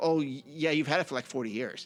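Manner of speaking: ordinary talk, nothing marked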